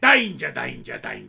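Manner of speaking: rough, creaky, loud presenter-style voice. Imitating how another speaker just sounded: imitating a friend's Steve Irwin-like voice. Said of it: "That's what you sounded like there".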